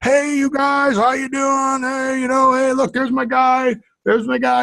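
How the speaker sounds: high-pitched voice calling out. Retelling greetings to people on Rush Street: Harry Carey impression. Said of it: "my worst Harry Carey impersonation".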